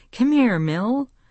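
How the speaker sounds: firm, demanding voice. Catherine, annoyed at being woken, calls her cat Millie; demanding, a little louder. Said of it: "Catherine demanded a little louder".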